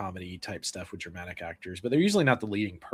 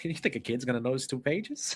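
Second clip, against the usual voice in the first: put-on, higher-pitched tough New York voice; 5 semitones higher than usual. Imitating an actor's line from a film scene: James Caan voice. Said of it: "when I hear the voice, 'cause I'm such a Godfather mark".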